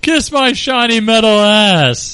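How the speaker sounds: very high, slow, stretched-out ass. Retelling how the actor first read the robot's line: Bender voice. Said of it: "he just kinda walked in and was like".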